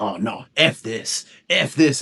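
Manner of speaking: very slow, drawn-out, fed-up dog voice. Retelling a dog's reaction to being mooed at again: imitating a fed-up dog. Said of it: "he got fed up".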